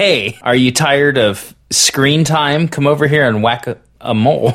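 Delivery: ordinary talk, nothing marked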